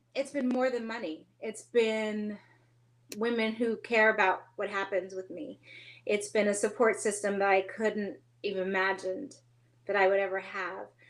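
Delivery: tearful, a little teary, close to crying. A speaker sharing her story, a little teary. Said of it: "Sorry, I get a little teary".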